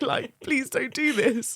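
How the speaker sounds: panicked, desperate pleading, high and loud.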